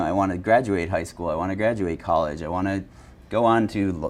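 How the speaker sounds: ordinary talk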